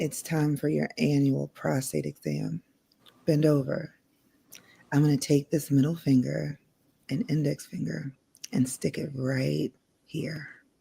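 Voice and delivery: soft, sultry, seductive, very sexy voice. Asked to read a sentence in their sexiest voice, reading it in a sexiest voice. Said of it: "Read this sentence in your sexiest voice".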